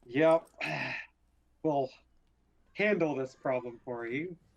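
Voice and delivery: words stretched out, spoken through a yawn. Voicing Cregan accepting the job with a grin: Cregan faking a yawn. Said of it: "act like he's yawning".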